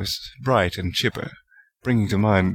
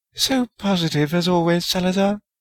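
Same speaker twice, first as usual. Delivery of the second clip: reproachful, reproving tone in a very high voice; 10 semitones higher than usual. A narrator reads a woman answering a dismissive man, reproving. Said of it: "Rowena said reprovingly".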